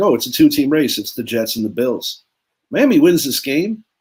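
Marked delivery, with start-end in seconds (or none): none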